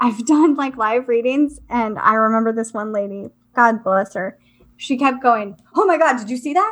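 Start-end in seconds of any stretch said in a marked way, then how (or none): 5.7-6.7 mock spooked woman's voice, rushed, freaked-out exclamation. Retelling a live reading where a woman kept seeing something, imitating a freaked-out woman. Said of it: "she was very freaked out".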